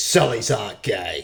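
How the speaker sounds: loud, slow, stern, fatherly pronouncement.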